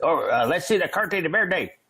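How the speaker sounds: put-on high Texas accent. Retelling being pulled over, the speaker imitates the officers in a texas accent. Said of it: "They all had Texas accents".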